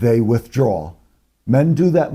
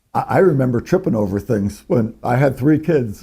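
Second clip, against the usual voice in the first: plain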